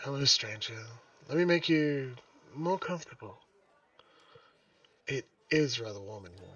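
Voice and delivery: distinct put-on woman character voice. Voicing Cyril greeting a stranger in the game: Cyril voice. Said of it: "Good voice for Cyril?".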